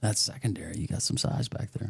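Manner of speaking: speaking in a hushed whisper. On the podcast with a guest, commenting to the other host: whispering. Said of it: "I don't know why I'm whispering".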